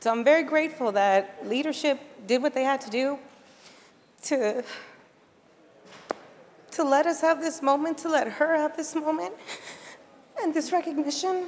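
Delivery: tearful voice, crying through the words. Paying tribute to a colleague lost less than a week ago: crying while speaking. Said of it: "I'm crying so much".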